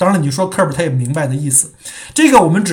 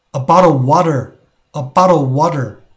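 "bottle of water" in American English. Showing learners how an American says a bottle of water: American accent. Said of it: "如果是美国人说".

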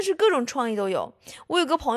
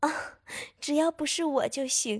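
put-on shyness, much quieter; 6 dB quieter than usual. Telling a joke, voicing a blushing girl's reply to a question, mock-shy, head lowered. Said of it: "低着头害羞地说".

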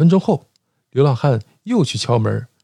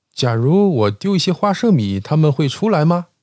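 usual speaking voice

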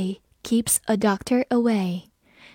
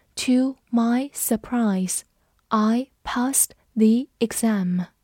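plain, clear reading-aloud delivery. Leading listeners to read an english sentence after me, slow reading. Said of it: "跟着我慢读一遍".

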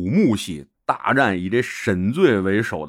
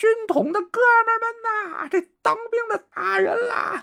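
shrill, high-pitched yelling. Retelling how a fighter called his comrades while hitting back: imitating someone shouting. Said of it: "一边喊啊".

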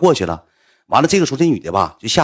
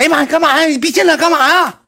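put-on, very high, startled woman's shrieking outburst; 5 dB louder than usual. Recounting walking into a room where a woman yelled at him: imitating a woman screaming. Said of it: "那女的嗷一下一喊".

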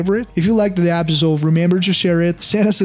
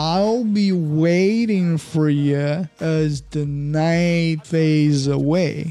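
very slow, careful, model-like reading. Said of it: "弱读会方便自己连读读得很快".

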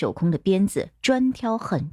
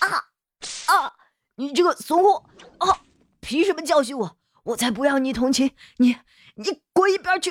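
high, rushed screams of pain; 9 semitones higher than usual. Pinned down and told to stop struggling, screaming in pain. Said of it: "古儿一边惨叫一边道".

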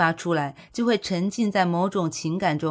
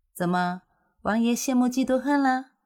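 playfully mocking, pitched-up teasing tone; 6 semitones higher than usual. Gu Xinxin speaks to the prince and Xiahou Yu: teasing. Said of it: "顾欣欣戏谑道".

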